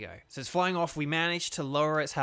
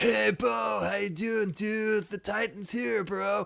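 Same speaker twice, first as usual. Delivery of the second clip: high, slow, stretched-out surfer dude drawl; 7 semitones higher than usual. Voicing the game character Arvin reading his line: surfer dude voice for Arvin. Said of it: "Why'd I go surf dude?".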